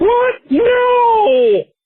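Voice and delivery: "no" high and stretched. Retelling a fan fiction scene, voicing Kermit the Frog. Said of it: "And Kermit is like".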